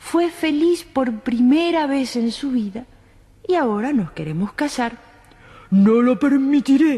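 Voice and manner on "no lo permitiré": booming, thunderous roar. Narrator reads the emperor answering the prince, roaring in a thunderous voice. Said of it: "rugió el emperador con voz de trueno".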